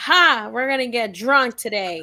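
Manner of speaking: cheery, lively party-guy voice. Retelling how a spirit friend called out about getting drunk: imitating Ernest saying it loudly.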